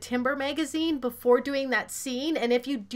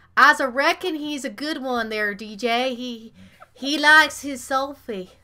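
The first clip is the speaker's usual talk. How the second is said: put-on southern drawl, louder; 5 dB louder than usual. Joking about a character on screen called a Southern cowboy: fake Southern accent. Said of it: "it's my fake Southern accent".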